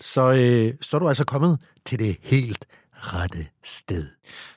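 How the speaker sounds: slick, polished, big-budget commercial voiceover announcer voice. Addressing listeners in a put-on expensive announcer voice. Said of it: "der tog jeg altså lige min rigtig dyre speakerstemme på der".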